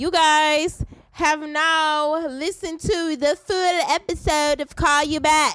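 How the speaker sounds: made-up Kiwi accent, now stretched. Speaker addresses the listeners in a made-up, vaguely New Zealand accent. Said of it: "I'm not sure what the accent was".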